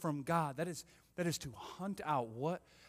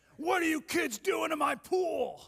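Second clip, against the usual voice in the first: very high, slow, booming, drawn-out voice; 13 semitones higher, 7 dB louder than usual. Retelling how a girl's dad yelled at kids throwing rocks, in Ronnie's booming voice. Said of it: "I heard a booming voice".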